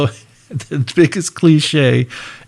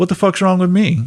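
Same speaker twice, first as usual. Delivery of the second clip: put-on deadpan delivery, higher pitch; 4 semitones higher than usual. Retelling Luke's reply in a pool hall: imitating Luke's straight-faced deadpan. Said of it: "straight face".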